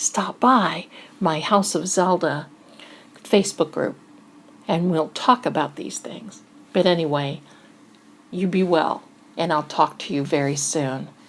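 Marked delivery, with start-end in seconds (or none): 0.0-6.4 hushed, soft whisper. Speaker signing off to listeners at the end, whispering. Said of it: "I'm whispering now".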